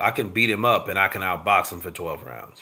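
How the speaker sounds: usual speaking voice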